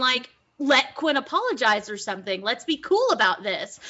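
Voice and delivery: ordinary delivery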